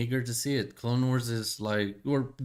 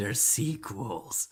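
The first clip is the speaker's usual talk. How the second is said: demonic voice. Talking about Star Wars, voicing the demon in the back of the head, demon voice. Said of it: "demon voice in the back of your head".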